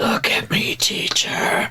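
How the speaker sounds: whispered vampire voice. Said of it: "that's a better vampire voice".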